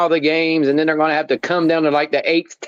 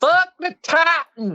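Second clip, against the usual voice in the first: very high-pitched voice; 13 semitones higher than usual. Repeating his own line the way a friend claims he says it: imitating Paul's version of him. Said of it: "say it like Paul says I said it".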